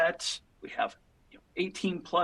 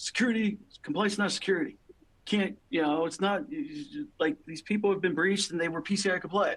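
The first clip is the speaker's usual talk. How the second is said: put-on sneering know-it-all voice, mocking, dismissive. Imitating security people who say compliance is not security: mocking tone. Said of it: "I'm intentionally doing that mocking tone".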